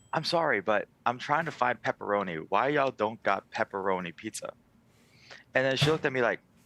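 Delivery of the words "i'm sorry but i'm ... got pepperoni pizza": put-on dead-serious, earnest tone with no joking. Retelling asking a cashier about pepperoni: imitating own dead-serious question. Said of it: "dead serious".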